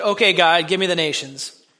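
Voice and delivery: mocking, sarcastic, scoffing and dismissive. Recalling how he answered something he found silly: retelling a mocking reply. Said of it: "mockingly said".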